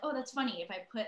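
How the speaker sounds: ordinary talk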